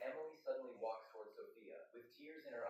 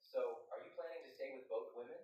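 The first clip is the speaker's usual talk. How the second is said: ordinary delivery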